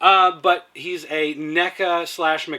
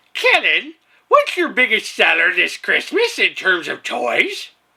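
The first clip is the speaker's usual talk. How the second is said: put-on sing-song voice, high, swooping, drawn out; 5 semitones higher, 4 dB louder than usual. Reading a viewer's question aloud, imitating T M C nineteen eighty-four's voice. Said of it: "this is his voice".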